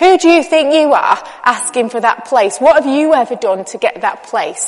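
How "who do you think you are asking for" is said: plain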